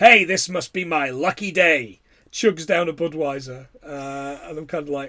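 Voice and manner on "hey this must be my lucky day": put-on American accent. Speaker retells a mover with a mattress speaking as a woman squeezes past: American accent. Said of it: "he turns with this American accent and says".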